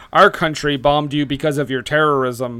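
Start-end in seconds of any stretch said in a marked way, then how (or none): none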